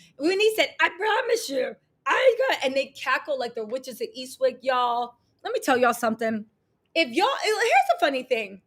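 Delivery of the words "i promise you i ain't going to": squawky, high cartoon duck-like voice. Imitating Simon, who talks like Daffy or Donald Duck: imitating Simon's duck-like voice. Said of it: "he talks like this".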